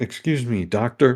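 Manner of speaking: nearly angry, on the edge of anger. Voicing a character who confronts the doctor: almost angry. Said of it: "she says almost angrily".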